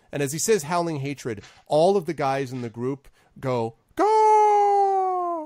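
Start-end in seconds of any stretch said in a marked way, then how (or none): 3.9-5.4 very high, shrill, drawn-out cry sliding down. Voicing the group's cry as one leader names them: falling cry. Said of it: "this sort of falling cry".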